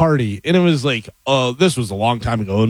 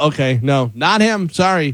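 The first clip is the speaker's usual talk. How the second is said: plain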